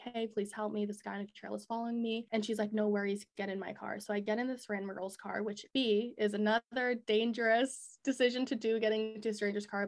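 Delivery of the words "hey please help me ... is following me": mock crying, put-on tearful voice. Retelling running to a stranger's car for help, imitating own crying. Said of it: "I'm like crying after and I'm like".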